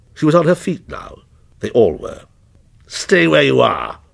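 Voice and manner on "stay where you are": harsh, rough, creaky snarl. Henry to his family, all now on their feet: snarled. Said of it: "he snarled".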